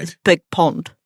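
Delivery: put-on New Zealand accent. Asked for the Kiwi accent, speaker repeats a greeting in a Kiwi accent. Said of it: "Give me the Kiwi accent".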